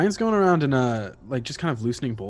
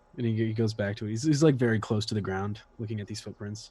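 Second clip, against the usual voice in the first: ordinary talk, nothing marked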